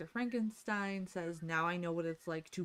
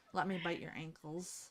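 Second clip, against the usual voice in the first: put-on small-dog voice, quieter; 4 dB quieter than usual. Voicing grandmother's small dog with a manager-complaint haircut: voicing grandmother's dog Darla. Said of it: "And she's like".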